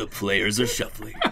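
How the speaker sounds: put-on cool deep voice. Narrating the game after being asked to, in a cool, deep voice. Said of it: "do it in a cool, like, deep voice".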